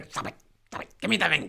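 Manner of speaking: fast, possessive, whispered creature voice. Speaker repeats the line after saying he sounded like Gollum, Gollum voice. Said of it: "I sounded a bit like Gollum there".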